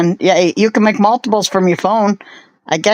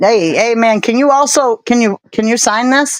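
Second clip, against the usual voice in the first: plain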